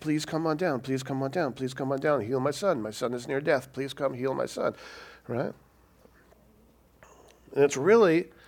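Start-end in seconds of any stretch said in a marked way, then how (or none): 0.0-4.7 acted desperate voice, quieter. Retelling an official's plea for his son to be healed: imitating someone begging. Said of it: "He's begging Jesus".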